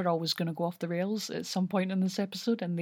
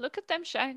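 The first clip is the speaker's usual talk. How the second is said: high-pitched, otherworldly talking monster voice; 6 semitones higher than usual. Quoting a line after the voice is compared to Mister Susan: Mister Susan voice. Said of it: "it particularly sounded like, um, Mister Susan, the mirror".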